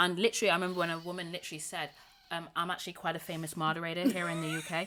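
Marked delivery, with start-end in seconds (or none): 2.6-4.9 imitated American accent. Retelling what a woman on Clubhouse said: imitating an American accent. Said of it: "she said it in an American accent".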